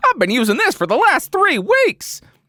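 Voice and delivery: very high-pitched carnival barker voice. Redoing the MKBHD meme line: MKBHD as 1920s carnival barker. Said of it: "sounds like a nineteen twenties carnival barker".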